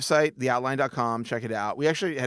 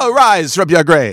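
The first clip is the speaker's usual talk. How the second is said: very loud, high, shrill put-on voice, belted out; 6 semitones higher, 15 dB louder than usual. Speaker in a conversation repeats a line, doing it in the Mario voice. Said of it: "I'm doing the Mario voice".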